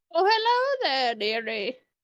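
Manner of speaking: put-on sing-song elderly grandma voice. Narrating, then voicing an elven woman met in the kitchen, old grandma voice.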